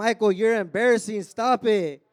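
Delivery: put-on irritated, pissed-off scolding tone. Retelling how a girlfriend scolded at the store: imitating someone pissed off. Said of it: "My girl walking next to me all pissed".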